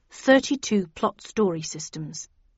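ordinary delivery

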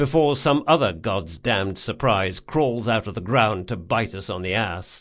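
ordinary delivery

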